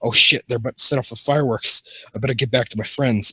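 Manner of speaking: plain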